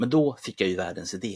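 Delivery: normal talking voice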